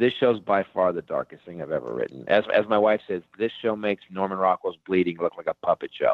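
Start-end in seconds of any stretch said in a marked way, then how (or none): none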